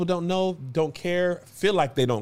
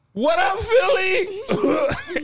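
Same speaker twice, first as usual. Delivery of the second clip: put-on very high, teary, cried-out crying voice; 13 semitones higher than usual. Retelling greeting the Philly show crowd after crying hard: imitating own crying voice. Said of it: "Angel made fun of me 'cause my voice".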